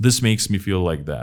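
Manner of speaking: ordinary delivery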